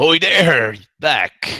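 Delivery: loud, high-pitched, carrying shout. Hailed by another ship's captain, a player's character shouts back across to the ship. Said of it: "I shout".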